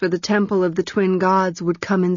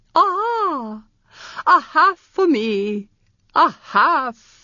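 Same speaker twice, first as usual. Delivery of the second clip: high, shrill cry, long drawn-out "ah"; 8 semitones higher than usual. A character calls out from outside the gloomy doorway, shrill cry. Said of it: "Manon cried shrilly".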